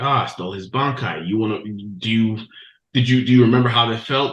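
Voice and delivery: ordinary talk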